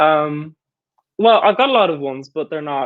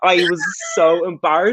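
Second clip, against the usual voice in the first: ordinary delivery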